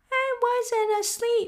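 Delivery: very high, weak, hoarse, feeble croaking squeak. Reading a story aloud, voicing the Dormouse just woken up, hoarse feeble voice. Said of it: "it said in a hoarse, feeble voice".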